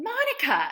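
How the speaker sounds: mock, very high-pitched, all-knowing tone. Retelling how a friend reacts to romantic mishaps: imitating Catherine's knowing tone. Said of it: "in this way that it's like, it just says everything".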